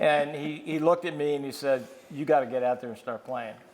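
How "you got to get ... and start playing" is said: usual speaking voice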